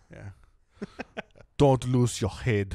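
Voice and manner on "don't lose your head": raised, Austrian-sounding German accent. Repeating a game character's line after being told he sounded austrian: german accent. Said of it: "There you go. That's pretty good".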